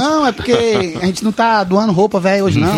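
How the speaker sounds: usual speaking voice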